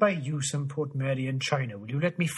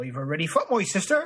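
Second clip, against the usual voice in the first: regional East Anglian accent; 3 semitones higher than usual. In a run of regional accents, after the cue East Anglia, use an East Anglian accent. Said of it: "East Anglia".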